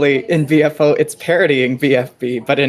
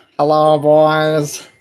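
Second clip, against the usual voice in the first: put-on flat droning monotone with boys drawn out. Imitating how mustached BFO males speak: monotone Squidward voice. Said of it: "speak in monotone Squidward voices. They're like this".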